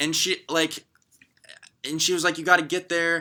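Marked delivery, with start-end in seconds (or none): 2.4-3.2 put-on, pressing, guilt-tripping tone. Retelling a boss insisting they come to work, imitating a boss guilt-tripping. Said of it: "guilt tripping me".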